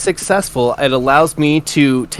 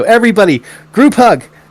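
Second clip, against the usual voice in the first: mischievous, wicked, raised call, pitched high; 7 semitones higher, 5 dB louder than usual. Announcing a surprise to the group with a wicked smile: wicked smiling call. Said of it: "get this wicked smile on my face and go".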